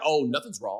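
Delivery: mock breezy tone, pointed, passive-aggressive, with an edge. Imitating the receiver A J Brown: A J Brown passive-aggressive impression. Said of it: "few traits I dislike more than passive aggression".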